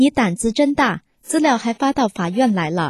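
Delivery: ordinary delivery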